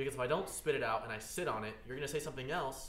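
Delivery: yelling, very loud. Explaining to the others why they interrupt people, yelling. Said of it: "You're yelling".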